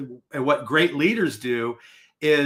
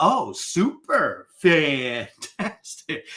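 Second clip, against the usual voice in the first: bubbly, perky, chirpy delivery. Speaker retells being asked how they are and mocking a perky woman's answer. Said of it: "And so I mocked her".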